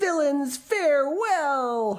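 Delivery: very high, shrill, loud howling cry. Narrator reads a character being chased by three boys, howled. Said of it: "Howled Patrick Edward".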